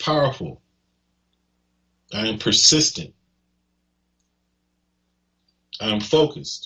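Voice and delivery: emphatic, emotion-charged, heartfelt delivery. A speaker demonstrates how to say self-affirmations aloud, said with emotion. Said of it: "notice the tone that I'm using".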